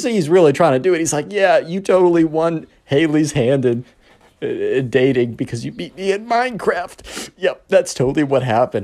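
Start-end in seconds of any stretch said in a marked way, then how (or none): 1.3-8.8 put-on voice holding back laughter. Retelling a friend's fake congratulations to a rival, imitating someone holding back laughter. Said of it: "Holding back the laughter".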